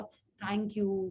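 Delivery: soft, limp, slack, deflated, lifeless delivery. Showing two ways to say thank you; this one limp, lifeless delivery. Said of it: "मरा सा ढीला सा ऐसे बोला".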